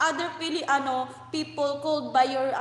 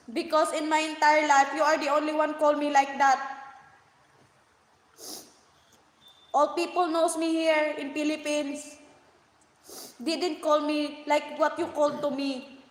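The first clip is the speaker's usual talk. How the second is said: tearful, crying, words breaking with sobs. Speaking to someone who called them names, crying. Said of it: "I know you see now that I'm crying".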